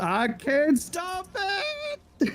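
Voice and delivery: very high, drawn-out voice breaking at the end. Quoting the game boss's final line, imitating a cracking voice. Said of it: "his voice cracks at the end".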